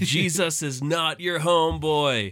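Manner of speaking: very slow, high, drawn-out, word-by-word yell. Retelling a seminary professor slamming the table, imitating someone yelling. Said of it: "slammed something on the table and just yelled".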